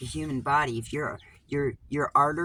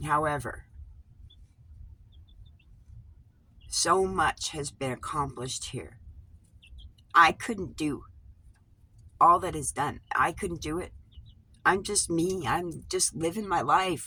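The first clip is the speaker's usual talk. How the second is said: fighting off crying. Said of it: "Don't start crying".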